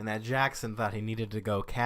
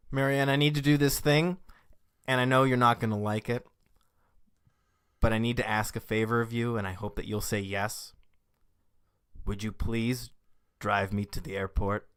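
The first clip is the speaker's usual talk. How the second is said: ordinary talk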